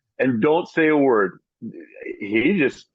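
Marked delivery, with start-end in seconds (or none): none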